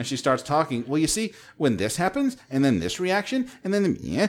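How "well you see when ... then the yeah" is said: upward rising inflection at the end of each phrase. Imitating an interviewed biochemist explaining a reaction: imitating a biochemist's upward inflection. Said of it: "When I hear that upward inflection".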